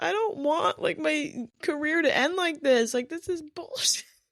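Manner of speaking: high, tearful, upset crying voice. Retelling getting off the field after an ankle injury: retelling crying.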